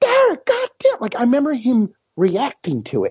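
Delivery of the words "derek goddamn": put-on loud, very high, startled holler. Retelling how Johnny reacted to what Derek did, imitating Johnny's loud high yell. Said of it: "he had that loud Johnny voice, that high pitch".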